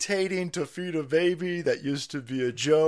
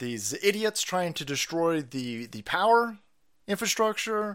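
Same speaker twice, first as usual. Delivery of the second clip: normal talking voice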